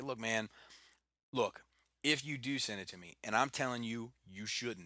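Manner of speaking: ordinary talk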